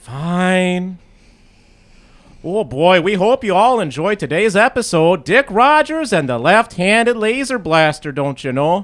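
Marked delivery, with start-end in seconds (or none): 2.4-8.8 put-on American Western accent. Recording a promo track after an episode: put-on Western accent. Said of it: "You told me to do one, so I'm doing one".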